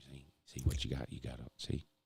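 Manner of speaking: very low, hushed, confidential undertone. Retelling how Pa advises you at the roulette table: imitating Pa talking quietly. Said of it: "talking at a level where only you can hear it".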